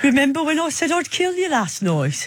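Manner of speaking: very high, put-on Brummie Birmingham accent. Reading a text message aloud, hearing it in a Birmingham accent. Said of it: "I can't help but hear it in a Birmingham accent".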